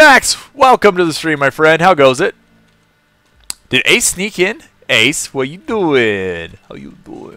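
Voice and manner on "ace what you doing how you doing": terrible put-on Italian accent, spoken softly. A streamer greeting a viewer, terrible Italian accent. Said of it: "I don't know why I'm talking like this".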